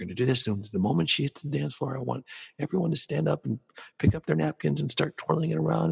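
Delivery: whispered voice. Speaker demonstrates giving a room instructions on the mic, whispering. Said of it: "And I'll whisper on the mic".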